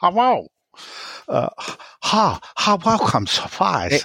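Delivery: put-on Chinese accent. Doing a requested accent for a listener: Chinese accent. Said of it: "I'd like to hear Shedman doing a Chinese accent".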